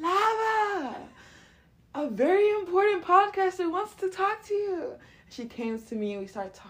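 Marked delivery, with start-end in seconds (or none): 0.0-4.9 very high, hollered call, stretched out long. Retelling how a guy called the performer over: imitating someone screaming. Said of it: "And he just screamed".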